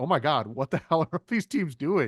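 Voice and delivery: mock rattled, alarmed, freaked-out panicky outburst. Imitating a team executive watching the draft: imitating Brad Holmes freaking out. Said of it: "freaking out a little bit".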